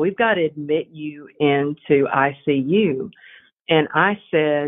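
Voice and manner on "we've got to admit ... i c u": usual speaking voice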